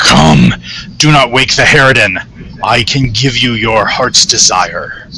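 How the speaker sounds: loud deep demon voice calling out. Narrator voicing Koth Val, now revealed as a demon, calling out to the players, deep Koth Val voice. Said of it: "calls out to you in a deep voice".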